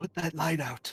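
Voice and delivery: whispered in a character voice. Playing Stacy, looking back to warn the next in line: whispering in character. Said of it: "Stacy looks back and whispers".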